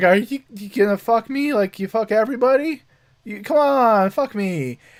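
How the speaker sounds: put-on play-acted drunk voice. Retelling a show's plot, quoting a drunk character's come-on: imitating a drunk character. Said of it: "she's drunkenly going".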